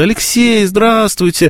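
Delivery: mock-delighted intonation on hello. Recounting how a man greets him at a festival, imitating someone's delighted greeting. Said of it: "Вот такие интонации".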